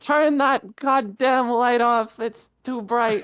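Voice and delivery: put-on very high, very loud, shrill, furious drunken yell. A narrator voices a figure on a table pointing at Ebois, shouting. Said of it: "starts shouting and he points at Ebois".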